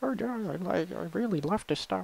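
strange tiny voice, very high, weird. Imitating Guy calling about releasing the record: Guy's weird little voice. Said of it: "weird little voice".

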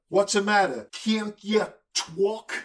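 put-on high New York accent. Reading a character's phonetically written line aloud: attempted New York accent. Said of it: "Now I'm going to try a New York accent".

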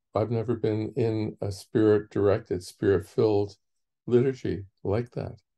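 ordinary talk

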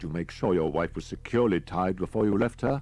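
plain reading voice

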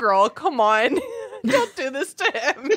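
laughing mid-sentence while talking. Reacting to a story about a crying girl, laughing while talking. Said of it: "I'm sorry that I'm laughing".

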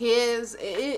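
stumbling, stuttering speech with restarts. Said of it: "I don't know why I'm stuttering".

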